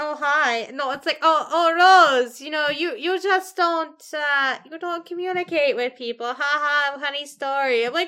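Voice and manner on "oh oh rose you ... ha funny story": halting, wooden, bad actor line reading. Imitating an actor's line to Rose: Tommy Wiseau voice. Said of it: "he just sounds like Tommy Wiseau as a Power Ranger".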